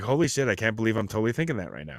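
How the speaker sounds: ordinary talk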